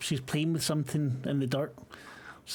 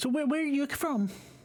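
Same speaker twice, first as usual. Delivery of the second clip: put-on little girl voice, much higher; 10 semitones higher than usual. In a shared story scene, voicing a little girl character, little girl voice. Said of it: "was that not my little girl voice?".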